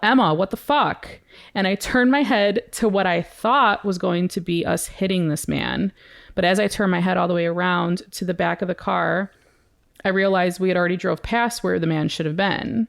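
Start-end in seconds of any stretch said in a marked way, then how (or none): 0.0-1.1 acted, half-yelled, sudden, startled exclamation. Retelling yelling at the driver as they nearly hit someone: imitating a yell. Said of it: "I yell".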